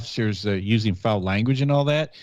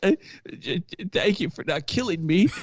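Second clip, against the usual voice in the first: acted, high, near-tearful, on-the-verge stammer; 8 semitones higher, 3 dB quieter than usual. Retelling what the arrested guy said in the car: imitating someone almost crying. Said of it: "almost crying".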